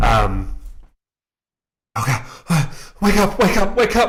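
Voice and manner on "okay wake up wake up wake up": very high, very loud frantic cries, rising pitch. Voicing a character calling to a frozen friend: panicked calling out. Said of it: "he's just, like, like, panicking".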